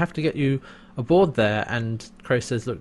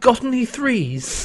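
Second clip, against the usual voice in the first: exaggerated, hammed-up British accent, very high pitch; 10 semitones higher than usual. Quoting how Pigram plays Scorpius: Pigram's exaggerated British accent. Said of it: "really puts on a very exaggerated sort of British accent, English accent. And he's like".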